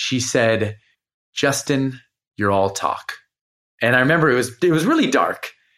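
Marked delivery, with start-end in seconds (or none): 1.3-3.1 put-on soft, gentle voice. Retelling what she said in bed with the lights off: imitating someone speaking softly. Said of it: "she said words so softly".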